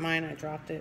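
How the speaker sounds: ordinary delivery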